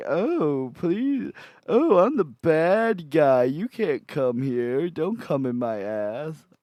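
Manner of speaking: drawn out with pitch swinging wildly. Imitating the devil character from Cow and Chicken: Cow and Chicken devil voice. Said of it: "and he's just like".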